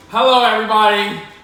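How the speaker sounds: overly loud for no reason. Greeting everybody at the start of an episode, loud for no reason. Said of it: "I'm so loud for no reason".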